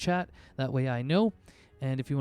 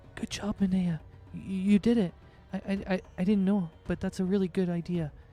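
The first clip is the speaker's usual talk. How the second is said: put-on whisper, much higher; 5 semitones higher than usual. Narrating a game scene, speaking as Belle, whispering in a player's ear. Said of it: "Belle kind of whispers in your ear".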